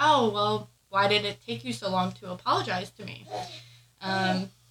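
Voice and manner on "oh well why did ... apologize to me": ordinary delivery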